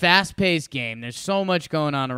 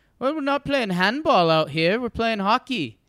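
put-on Swedish accent, slightly higher pitch; 6 semitones higher than usual. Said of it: "in his, like, Swedish accent or whatever".

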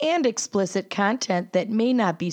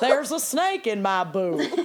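put-on old-timey gold prospector voice. Two hosts pretending to be old-timey prospectors looking for gold; old-timey prospector voice. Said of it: "pretending to be old-timey prospectors".

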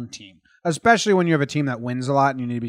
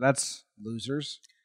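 ordinary delivery

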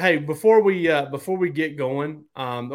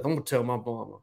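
put-on mumbling under breath, quieter; 2 semitones lower, 6 dB quieter than usual. Retelling a player's remark after a coach scolds him: imitating muttering under breath. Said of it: "says under his breath".

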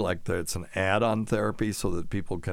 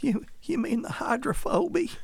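put-on hillbilly accent, much higher pitch. Responding to a chat-room question about rabies, in a hick voice. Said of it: "talk like a hick".

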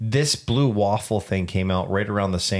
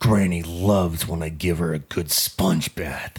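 put-on grumpy old man voice, lower; 2 semitones lower than usual. Asked to do a grumpy one, speak in a grumpy old man voice. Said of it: "Grumpy old man".

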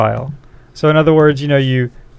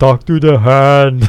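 put-on Austrian accent, louder; 4 dB louder than usual. Asked by the other speaker to use the accent: Arnold Schwarzenegger accent. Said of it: "do it in, in the right accent".

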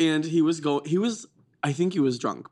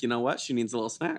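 usual speaking voice

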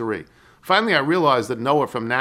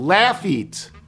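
stress on first syllable of "laugh"; 6 semitones higher than usual. Giving the local pronunciation of a louisiana town name, stress on first syllable laugh. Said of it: "emphasis on laugh".

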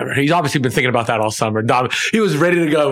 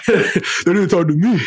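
pitched-up voice sounding hurt and left out; 5 semitones higher than usual. Acting out a player's reaction to not being consulted, best player voice. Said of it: "best player voice?".

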